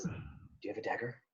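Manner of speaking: soft, hushed, secretive whisper. Voicing a character who asks another character about a dagger: whispering. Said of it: "whispers to you and she says".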